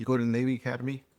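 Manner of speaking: put-on whispering voice. Retelling how a man at dinner asked a question: imitating someone whispering. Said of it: "He kinda whispers to me".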